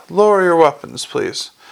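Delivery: ordinary delivery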